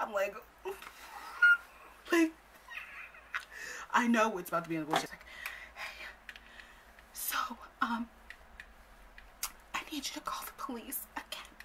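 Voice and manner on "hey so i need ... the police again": soft, high whisper. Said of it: "She's whispering".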